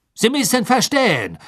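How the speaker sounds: hasty, rushed delivery. Answering the questioner's demand for names, hastily. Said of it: "sagte Karkaroff hastig".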